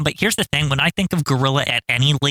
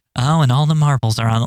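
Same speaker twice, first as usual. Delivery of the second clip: offhand, casual put-on announcer voice, pitched lower; 3 semitones lower than usual. Showing how the commentator really says it: offhand Gorilla Monsoon impression. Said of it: "he doesn't care".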